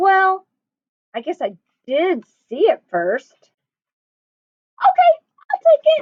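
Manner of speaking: very high, swooping storybook voice. Telling a story, the narrator gives Chipmunk's reply to Mouse: Chipmunk voice, a little higher. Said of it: "I make my voice a little higher to portray Chipmunk".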